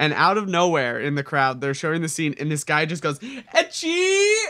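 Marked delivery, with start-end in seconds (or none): 3.2-4.3 mock sudden blurted yell, very loud, shrill, high. Retelling a guy in the crowd yelling out: imitating someone yelling loudly. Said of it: "yells it out super fucking loud".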